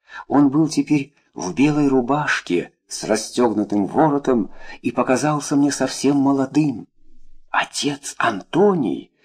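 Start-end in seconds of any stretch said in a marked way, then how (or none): 7.5-9.0 astonished, unbelieving, disbelieving stage whisper. Narrator reads a woman recognizing a man at the window: half-whispering. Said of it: "прошептала я".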